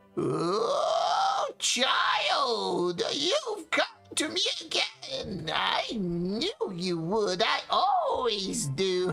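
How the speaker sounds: piercing, reedy, thin, sharp voice, very slow. Narrating a voice calling from behind a hut's warped shutters: thin, sharp voice. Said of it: "a voice that is thin and sharp".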